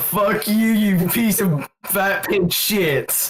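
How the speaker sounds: slow, menacing, threatening, intimidating tone. Playing a prisoner who insults the police officer: intimidating. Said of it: "I choose to intimidate the police officer".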